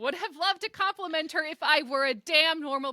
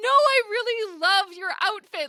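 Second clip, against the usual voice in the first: loud, eager put-on hollering; 4 semitones higher, 5 dB louder than usual. Retelling hollering after a stranger who walked away: imitating own holler. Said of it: "I wanted to holler at her".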